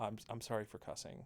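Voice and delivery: soft, quiet voice under the breath. Retelling what they said to their grandparents after telling the story, quiet apology. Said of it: "I just quietly went".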